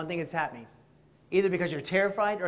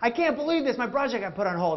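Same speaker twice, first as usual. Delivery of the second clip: exasperated, high, frustrated half-yelled venting; 5 semitones higher than usual. Acting out telling a friend the news, yelling. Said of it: "I'm yelling about it".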